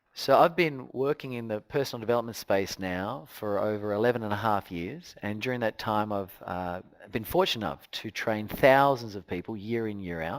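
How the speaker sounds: very low, quiet, subdued, low-key, low-energy delivery. Showing how the first minutes on stage sound: low energy delivery. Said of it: "I do it in low energy. So it'd sound like this".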